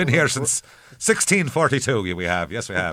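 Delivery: put-on Irish accent. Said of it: "Sounds like I own a pub".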